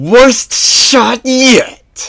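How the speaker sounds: very high-pitched growl through clenched teeth. Narrator reading a young woman's line at her returning enemy: growled through clenched teeth. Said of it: "growled through clenched teeth".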